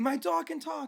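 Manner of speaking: mock frantic yelling. Retelling a woman running through her neighborhood at night, imitating frantic shouting. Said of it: "she's just running frantically".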